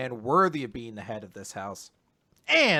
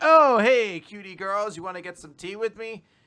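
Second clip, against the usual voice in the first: high, flirty ladies'-man playboy tone; 6 semitones higher, 4 dB louder than usual. Retelling a manga scene where Finral chats up two women: Finral's flirty playboy act. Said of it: "Finral starts doing his whole act".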